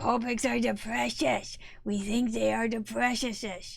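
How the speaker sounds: put-on cave creature voice. Asked to say Copics are precious as Gollum: Gollum voice. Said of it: "in a Gollum voice".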